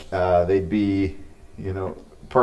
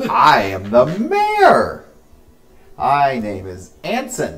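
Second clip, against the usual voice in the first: pitched-up, sing-song voice, slow and swooping; 5 semitones higher, 3 dB louder than usual. Game master voices the halfling mayor introducing himself to the travellers, Anson voice. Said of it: "you're approached by a smaller halfling. He's maybe 2.5 feet tall. He's wearing real baggy clothes, so he kind of like waddles while he walks. He's got a full beard".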